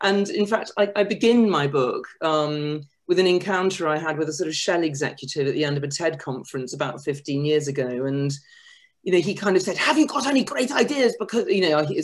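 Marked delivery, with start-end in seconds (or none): 9.8-11.8 really bad, pitched-up put-on Dutch accent. Quoting a Shell executive met at a conference: really bad Dutch accent. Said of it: "that's a really bad Dutch accent".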